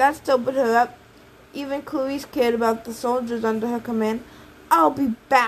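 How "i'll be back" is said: words said with a growl. Reading a novel, a girl speaks before leaving to assess the damage: growled. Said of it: "she growled".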